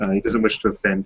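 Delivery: ordinary delivery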